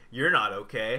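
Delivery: imitated drunk voice. Retelling what a super drunk friend said: imitating drunk Azure. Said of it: "I hear he's super drunk".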